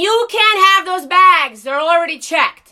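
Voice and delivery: loud, screamed yelling. Retelling what the gate lady screamed: imitating the gate lady screaming. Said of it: "the gate lady screaming from the gate saying".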